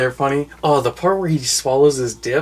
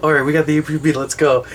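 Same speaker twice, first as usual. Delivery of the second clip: ordinary delivery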